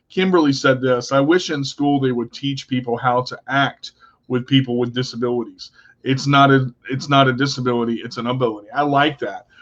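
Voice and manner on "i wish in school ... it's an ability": ordinary talk, nothing marked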